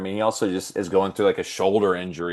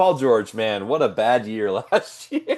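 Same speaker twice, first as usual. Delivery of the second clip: giggling, laughing through the words, barely holding together; 3 semitones higher than usual. Discussing a player with another speaker, laughing while talking. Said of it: "I just can't stop laughing".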